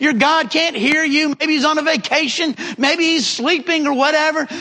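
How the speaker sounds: scornful, goading, taunting delivery. Retelling Elijah taunting the prophets of Baal: imitating Elijah's taunting yell. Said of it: "he's taunting them, and he's yelling at them".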